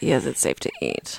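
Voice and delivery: barely-there, very quiet, breathy whisper. Retelling how a woman answered your question, imitate her quiet reply. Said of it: "She said that very quietly. She was like".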